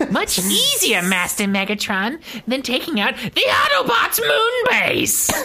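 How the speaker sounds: very high villain voice swooping around. Quoting a Decepticon voiced by the same actor, in a Cobra Commander-style voice. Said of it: "the same voice actor who did Cobra Commander".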